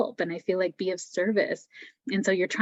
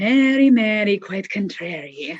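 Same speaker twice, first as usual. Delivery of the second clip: fake Irish accent, loud, slow, drawn out; 8 dB louder than usual. Repeating a name as a rhyme: put-on Irish accent. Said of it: "I wanted to talk in an Irish accent".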